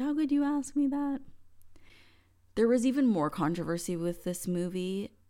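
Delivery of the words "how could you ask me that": mock very high, shrieking cry. Retelling how she reacted to a question he asked her, retelling her screaming. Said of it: "she just started screaming at me like".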